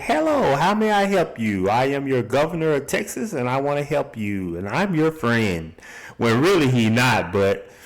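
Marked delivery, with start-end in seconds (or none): 0.0-5.7 phony, fake-friendly nice-guy politician voice. Describing one of the security guys, mock friendly politician voice. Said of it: "his nice fake politician smile".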